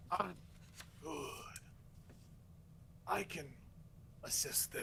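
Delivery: slow, whispered dark lord voice.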